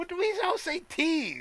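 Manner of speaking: very high baffled bewildered squeal. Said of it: "I'm like".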